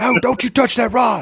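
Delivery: mock high-pitched, shouted scream. Retelling waking as a fish hit the rod: retelling a scream. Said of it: "I screamed".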